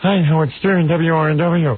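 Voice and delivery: very slow, tight, high-pitched nervous announcing voice. Recalling starting out as a nervous disc jockey: imitating his nervous high voice. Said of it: "my voice was up here somewhere ... I would talk like this".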